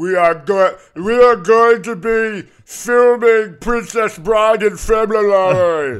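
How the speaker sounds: very loud, very slow, booming drawl. Comparing how a word sounds in a thick Boston accent: Andre the Giant voice. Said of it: "It sounds like Andre the Giant".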